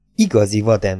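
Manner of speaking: usual speaking voice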